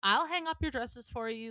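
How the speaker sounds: mean, insistent put-on voice. Retelling when Alva confronts you at your doorway, imitating Alva's raised mean voice. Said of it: "She's like raising her voice and like being mean".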